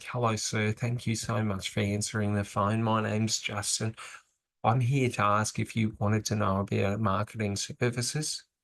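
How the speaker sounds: nervous, scared, uninflected, flat monotone. Example of how not to open a marketing phone call: scared monotone. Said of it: "we don't want to be talking monotone and talking like this and very, very scared".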